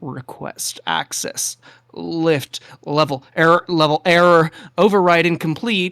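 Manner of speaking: broken, malfunctioning-sounding, distorted, garbled voice. Game narrator voices an echo forming at broken lift controls, in a distorted voice. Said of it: "distorted voice saying".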